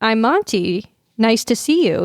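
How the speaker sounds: put-on robotic voice. Friends imagining a horror movie where an app's AI shows up at the door, robotic Monty voice. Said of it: "He has that robotic voice".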